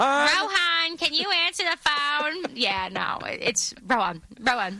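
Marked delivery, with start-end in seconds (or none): 0.0-2.5 put-on New Jersey accent. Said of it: "I sound like I'm from New Jersey".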